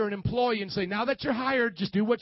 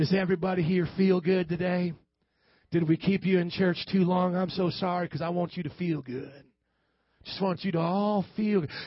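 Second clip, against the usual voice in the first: put-on Southern accent, pitched lower; 5 semitones lower than usual. Preacher voices Dr. Feelgood addressing the church, in a southern accent. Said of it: "He sometimes talks with a southern accent".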